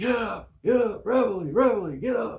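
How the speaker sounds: mock very high, loud, screamed and yelled delivery. Retelling how the chief and others woke the barracks: imitating someone screaming. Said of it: "They're just screaming".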